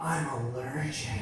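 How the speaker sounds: whispering. Retelling own reply to her: retelling own whisper. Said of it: "And I whisper back".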